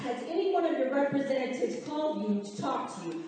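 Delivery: ordinary talk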